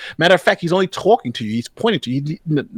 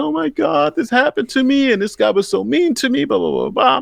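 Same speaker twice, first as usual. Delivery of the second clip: very high, put-on tearful crying voice; 9 semitones higher than usual. Retelling a complaint made in tears: imitating a woman crying. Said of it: "she's crying and in tears".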